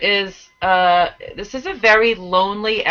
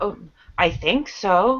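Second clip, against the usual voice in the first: mock sarcastic tone, quieter; 4 dB quieter than usual. Retelling a character's answer to whether he is ready: imitating a sarcastic reply. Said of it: "that sarcastic".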